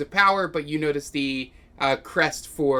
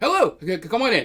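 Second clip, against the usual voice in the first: put-on, high, little character voice; 5 semitones higher, 4 dB louder than usual. Voicing a halfling greeting the players at the door: halfling voice. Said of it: "a three and a half foot halfling standing down there, and he goes".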